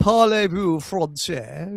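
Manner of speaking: put-on French spoken with an English accent. Speaker imitates how Teddy spoke French, imitating Teddy's English-accented French. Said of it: "He spoke it in an English accent".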